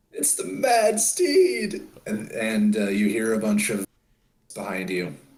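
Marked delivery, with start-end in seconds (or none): 0.2-1.9 loud, very high, drawn-out shriek. Voicing a man who stands up from the table: screaming very loudly. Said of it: "stands up from the table and screams very loudly".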